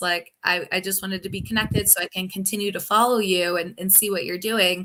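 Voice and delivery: normal talking voice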